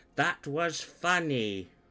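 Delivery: condescending, demeaning tone. Voicing a character who looks down at a little girl: demeaning tone. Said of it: "really demeaningly looks down".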